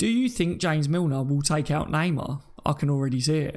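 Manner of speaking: plain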